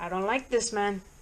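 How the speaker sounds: plain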